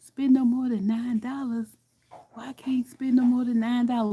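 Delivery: mock whispered voice. Retelling her own reply to the date at the table: imitating own whisper. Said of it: "Whisper back to him".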